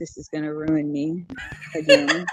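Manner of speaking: hushed, pensive, slow little whisper. Picturing the director giving up on the film: imitating Wes Craven's little whisper. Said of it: "in his little whisper, quiet voice".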